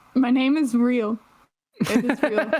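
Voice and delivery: high voice trying for serious, laughter breaking through. Answering a listed question that claims your name is fake, trying to sound serious. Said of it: "tried to like sound serious, but like your voice just doesn't help".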